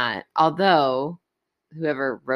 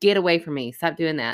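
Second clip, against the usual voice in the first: ordinary talk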